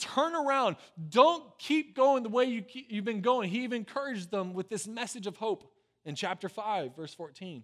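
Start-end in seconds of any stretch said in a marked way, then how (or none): 0.0-3.5 loud, high-pitched pleading. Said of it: "he's begging for them".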